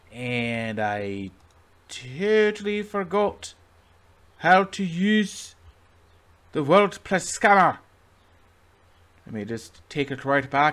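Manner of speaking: mixed Scottish and Irish accent. Talking through using WordPress tools, in a Scottish-Irish hybrid accent. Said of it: "why am I speaking like a Scotsman Irish hybrid".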